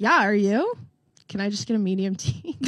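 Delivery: ordinary delivery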